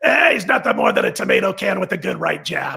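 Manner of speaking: put-on, roughened voice with swinging pitch. Retelling what he suddenly heard someone say: Koken voice impression. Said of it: "I can't do his voice, but I'm going to give it a shot anyway".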